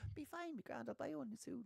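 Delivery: high, soft, careless dismissive tone. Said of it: "and he was like".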